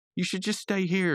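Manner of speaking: very high, pleading squeak.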